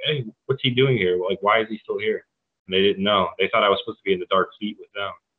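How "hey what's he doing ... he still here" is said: put-on whispering voice. Retelling what people would say about the speaker: imitating people whispering. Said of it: "people would kind of whisper".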